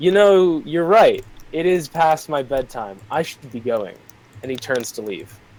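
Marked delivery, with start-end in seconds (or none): 0.0-4.0 smug, unbothered, dismissive tone in an acted voice. Voicing a character who smirks at a player before leaving: smirking NPC reply. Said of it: "he looks at you and smirks at you and says".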